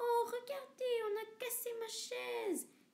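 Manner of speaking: tiny, very high crying voice, near tears. Narrator reading a bear family story, voicing Baby Bear's tiny crying voice. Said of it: "dit bébé ours en pleurant avec sa toute petite voix".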